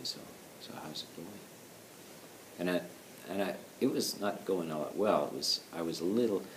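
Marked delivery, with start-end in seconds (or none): 0.0-1.3 very soft, kind, gentle, hushed near-whisper. Retelling how a man at a retreat asked how it was going: imitating a nice, gentle voice. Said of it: "in a very nice, gentle voice".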